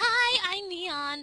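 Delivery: put-on girl character voice. Voicing characters for Oblivious, the speaker introduces Neon in Neon's girl voice. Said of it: "And now I'm doing girl voices".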